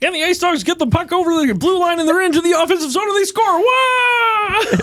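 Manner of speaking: very high pitch with stretched-out wah. Imitating a hockey TV announcer calling a goal: Kermit the Frog voice. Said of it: "he straight up sounds like Kermit the Frog".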